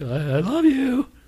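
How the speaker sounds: mock hesitant delivery. Retelling how he said I love you back; imitating an apprehensive I love you. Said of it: "It's real apprehensive".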